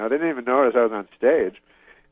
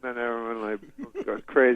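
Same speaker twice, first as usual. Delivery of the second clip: ordinary talk, nothing marked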